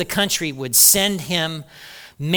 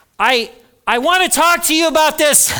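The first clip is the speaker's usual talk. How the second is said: loud raised voice, much higher and louder; 10 semitones higher, 6 dB louder than usual. Acting out speaking up to someone in authority, in a raised voice. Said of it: "so I'm raising my voice".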